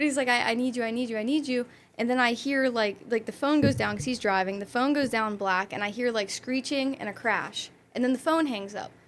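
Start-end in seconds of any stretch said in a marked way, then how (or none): 0.3-1.7 put-on desperate pleading, begging tone. Retelling an ex's FaceTime call: imitating someone begging. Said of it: "he was begging me, like, begging me".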